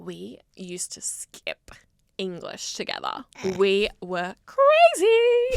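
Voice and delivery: swooping bridesmaid voice, crazily stretched out. Mimicking how all bridesmaids speak to the brides, mocking bridesmaid voice. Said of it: "This is how all bridesmaids speak".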